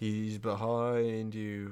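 dark, foreboding, ominous put-on pantomime call. Retelling a call from a pantomime: imitating an ominous call.

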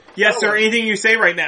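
plain

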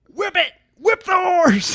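high, loud yelling through laughter.

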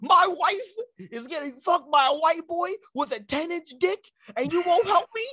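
play-acted, sudden, very high shrill yell, "wife" drawn out. Retelling how someone suddenly yelled out at him, retelling a yell. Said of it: "Kanye just yells out".

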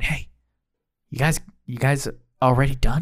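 low whisper. Game master voices Linda calling from near the store plants, Linda's whisper. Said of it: "you hear a whisper from, Linda going".

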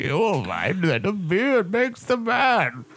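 very high villain voice, swooping, swinging pitch. Talking with another speaker about impressions, doing a Bane voice. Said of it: "should I do Bane voice?".

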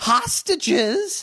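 very high, squeaky cracking voice. Reading the brothers' shocked reply aloud: voice crack. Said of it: "Nice voice crack".

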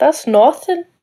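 put-on Irish accent. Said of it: "What do you say it like that for?".

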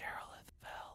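in a whisper. Game narrator voicing the whisper a sleeping player hears, whispering. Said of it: "one of you hears a whisper".

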